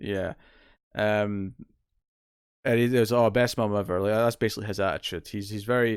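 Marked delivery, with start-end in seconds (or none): 3.1-4.0 mock deadpan, flat tone. Retelling a character's reply to his mother, imitating a deadpan delivery. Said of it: "very deadpan way".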